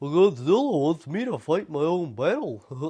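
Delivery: high, loud character voice. Retelling a movie scene, imitating how Minya talks: Minya voice. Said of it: "this is how he talks".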